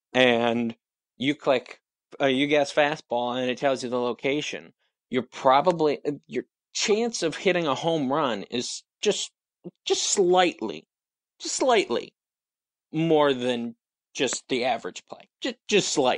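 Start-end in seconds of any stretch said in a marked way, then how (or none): 6.2-16.2 very sarcastic delivery, laid on thick. Downplaying the advantage of knowing the pitch and location: very sarcastic. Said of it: "I'm being very sarcastic there".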